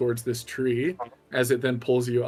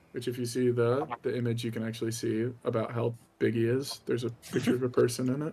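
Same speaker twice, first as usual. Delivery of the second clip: plain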